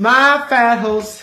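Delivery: loud, high put-on Texas-style Southern accent. Quoting something from Texas, the speaker switches into a southern accent. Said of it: "why is there this such a southern accent on top of it?".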